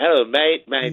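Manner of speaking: put-on Australian accent on the word mate. Retelling how an Australian guy came up to him, Australian accent. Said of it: "Australian guy".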